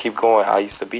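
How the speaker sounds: plain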